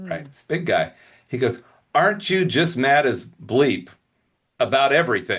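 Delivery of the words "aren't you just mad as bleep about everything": usual speaking voice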